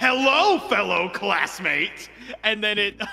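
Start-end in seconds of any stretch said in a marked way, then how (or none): 0.0-2.1 mock, put-on aggressive tone. Retelling how you greeted a classmate as he came in, mock-aggressive greeting. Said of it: "I said to him very aggressively".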